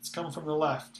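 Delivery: ordinary delivery, nothing marked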